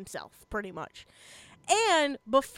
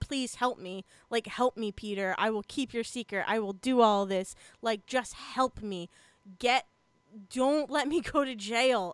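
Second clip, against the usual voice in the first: desperate, pleading, begging voice; 3 semitones lower than usual. Retelling a scene where a character begs peter for help: imitating someone pleading. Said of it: "he is again still pleading".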